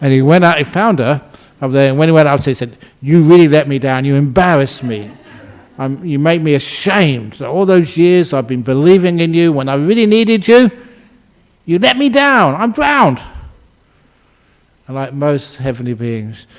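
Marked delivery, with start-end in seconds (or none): 3.0-13.2 upset, furious, angry tone, rising. Retelling a story, voicing a devotee blaming Kuan Yin: imitating an angry, upset man. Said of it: "he was in a filthy mood".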